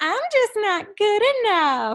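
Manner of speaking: grating, put-on, very high, annoying voice. Saying one's own belief out loud: put-on annoying voice. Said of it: "say your belief out loud in a really annoying voice".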